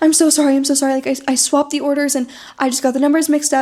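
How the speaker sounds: put-on frantic, pleading tone. Retelling a video of a delivery driver coming up to a house: imitating a frantic apology. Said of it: "she was coming up just frantic".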